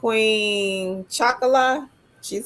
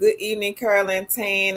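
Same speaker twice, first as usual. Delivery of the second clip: normal talking voice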